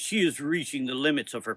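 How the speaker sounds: ordinary delivery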